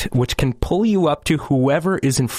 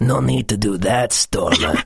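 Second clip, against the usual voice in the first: low, creepy, unsettling character voice; 5 semitones lower than usual. Impersonating Zipper talking to Stormer: creepy Zipper voice. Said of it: "But he does say it creepy like that".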